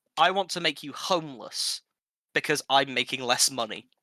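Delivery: ordinary talk, nothing marked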